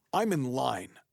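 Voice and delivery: loud, mock really upset, aggrieved tone. Retelling what a man in line said behind him: imitating an upset voice. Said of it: "in a really upset voice goes".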